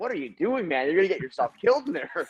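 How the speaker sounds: high, alarmed, frightened, pleading dog voice. Voicing their dog watching another dog swim in the hot tub, voicing a terrified dog. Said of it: "my dog is terrified of the water".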